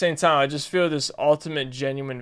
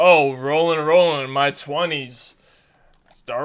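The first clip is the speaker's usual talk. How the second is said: put-on sarcastic tone; 4 dB louder than usual. Explaining what he really means, imitating a sarcastic tone. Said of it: "like saying like sarcastically like".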